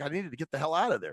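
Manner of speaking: ordinary delivery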